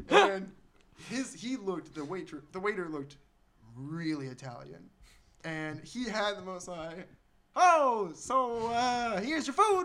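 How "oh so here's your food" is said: slight put-on Texan drawl, slow and raised pitch. Retelling how a waiter served them their food: slight texan accent. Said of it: "he almost had a slight Texan accent".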